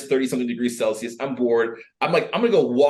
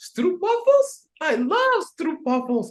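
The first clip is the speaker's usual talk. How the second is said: tiny, very high little voice, drawn out slowly. Retelling what an unknown girl nearby said: imitating a small voice. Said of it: "a small voice go".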